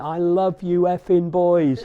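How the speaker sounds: put-on wild, high, loud screaming. Retelling celebrating with the boys in the dressing room: imitating own scream. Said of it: "I'm screaming".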